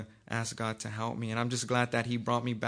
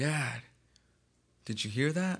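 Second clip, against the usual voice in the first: put-on crying little boy voice, tearful; 3 semitones higher than usual. Retelling how his son came out crying and asked something: imitating his son crying. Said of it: "and he's crying".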